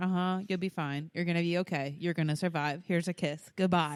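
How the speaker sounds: put-on weary, dismissive tone. Retelling own bedtime routine with a child: imitating being over it. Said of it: "I'm just so over it".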